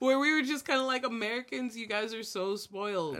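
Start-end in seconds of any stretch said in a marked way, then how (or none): 1.0-3.2 superior, condescending, scoffing tone with laugh in voice. Describing how Haitian Americans react to Americans: acting out condescending laughter. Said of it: "We're kind of laughing condescendingly".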